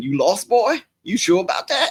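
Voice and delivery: very high, swooping, taunting jeer. Retelling a taunt from the clip's racist role: imitating the racist character. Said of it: "him keep spitting that out the window at him, going".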